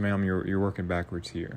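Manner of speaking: ordinary talk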